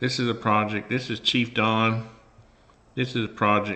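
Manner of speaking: loud, emotional, choked-up voice, close to tears. Looking at a buddy's finished project, caught off guard: choking up. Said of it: "that's choking me up".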